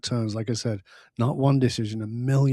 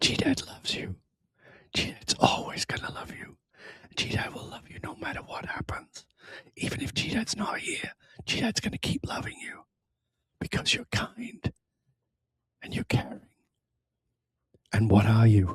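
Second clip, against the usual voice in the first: soft, breathy, close-in whisper; 5 dB quieter than usual. The speaker recounts what he whispers to the children, retelling a whisper. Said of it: "I whisper to them".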